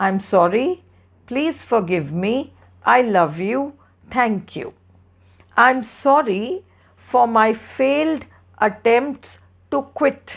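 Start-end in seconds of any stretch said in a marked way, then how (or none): none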